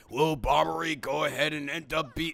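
put-on dramatic narrator voice. Imagining life as a Dragon Ball Z interlude, in Dragon Ball Z narrator voice. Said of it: "if I was a Dragon Ball Z interlude, it'd probably go something like this".

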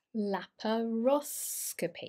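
laparoscopy with stress on third syllable ros. Explaining the uk pronunciation of laparoscopy: stress on the "ros" syllable. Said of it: "So the stress is on the O".

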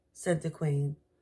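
ordinary delivery, nothing marked

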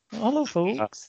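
campy delivery, pitched very high. Imitating a guest's greeting: camp Michael Barrymore voice. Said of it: "he went very Michael Barrymore there".

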